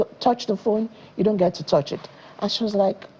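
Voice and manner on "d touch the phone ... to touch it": ordinary delivery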